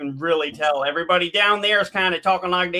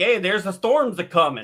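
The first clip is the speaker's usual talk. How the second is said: put-on local North Dakota accent. Describing how people talk up in North Dakota, imitating a North Dakota accent. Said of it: "get up to like North Dakota, and you'll hear people going like".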